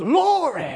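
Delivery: worked-up, fired-up preacher-style cry. Imitating a preacher wiping his face with his hanky: imitating a fired-up preacher. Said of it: "when he gets all fired up".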